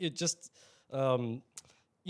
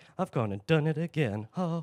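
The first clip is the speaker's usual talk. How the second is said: put-on smug cheeky voice; 2 semitones higher than usual. Mocking a cheeky quote followed by a smirk: smug cheeky Shelby Foote impression. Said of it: "smirk and look down of".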